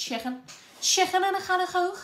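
exaggerated fake Scouse accent. Noticing a word came out with a scouse accent, repeating it in a bad scouse accent. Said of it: "The Scouse accent in it".

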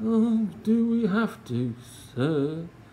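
high, whiny moan with a yawn held back. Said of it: "moaned Dribbling Drew, shift-stifling a yawn".

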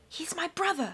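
intense, fierce, pressing, high-set half-whisper. Fiona answers Klaus, who doubts taking the mycologist along, in a fierce half-whisper. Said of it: "Fiona replied in a fierce whisper".

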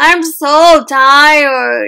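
loud, groaning moan. Reading a story aloud, a sleepy character is being woken up: moaned. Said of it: "Gregory moaned".

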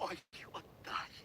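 hushed, rushed, scared, pleading whispered mutter. Kost, on his knees, pleads with Tetyana: frightened, fast pleading mutter. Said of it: "швидко, злякано, жагучою мольбою забурмотів".

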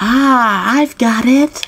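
slightly creepy voice. Voicing a game character who has an idea: slightly creepy voice. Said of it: "That's a little creepy".

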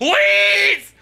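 very high, loud, desperate, pleading scream. Retelling a desperate moment in a game battle: imitating own screaming. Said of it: "And I'm just screaming".

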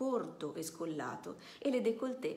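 ordinary delivery, nothing marked

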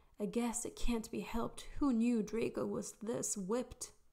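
exaggerated, theatrical sigh. A narrator reads one mate's remark as their friend leaves them, sighing dramatically. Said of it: "Blaze sighed dramatically".

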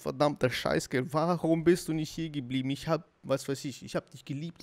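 ordinary delivery

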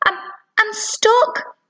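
stuttering, stammering words out, very high pitch. A narrator reads a girl up a tree answering a woman, stammering. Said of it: "Madeline stammered".

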